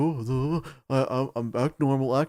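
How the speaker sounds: put-on nervous voice. Retelling a story, speaker mimics a guy walking past security: imitating a nervous guy. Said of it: "he's like all nervous that they're gonna catch him".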